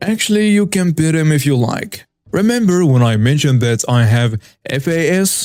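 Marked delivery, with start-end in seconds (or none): 0.0-2.1 put-on Russian-accented speech. Retelling own reply to a mom about the service dog, Russian accent. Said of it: "in a Russian accent".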